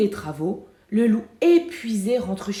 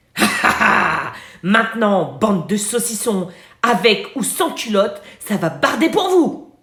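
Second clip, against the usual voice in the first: deep, heavy, raised voice; 6 dB louder than usual. Narrator reading a children's story, a voice cuts into a squabble: big voice. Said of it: "on entend une grosse voix qui dit".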